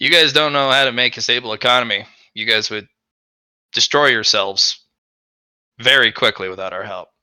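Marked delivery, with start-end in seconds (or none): none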